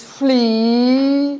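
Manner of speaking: heavy stress placed on the word "flea". Speaker shows how to read the poem aloud, with stress on 'flea'. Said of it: "I put extra stress on the word flea".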